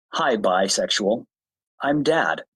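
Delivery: mock very slow, low, drawn-out deadpan. Retelling a joke said to a daughter: retelling a deadpan line. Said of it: "with a totally straight face".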